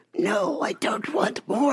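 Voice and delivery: put-on made-up small child voice. Retelling what a four-year-old girl said at the dinner table: imitating a girl's made-up voice.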